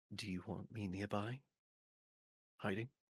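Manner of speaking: muttering under breath. A player's character privately messages another character in the game, muttering under breath. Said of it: "just kind of muttering under my breath".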